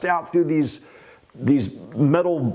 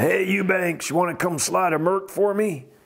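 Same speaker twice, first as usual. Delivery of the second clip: rough, offhand, not very convincing stunt boss voice; 2 semitones higher than usual. Retelling a phone call from the stunt coordinator: Terry Leonard impression. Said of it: "that was a Terry Leonard im-, impersonation".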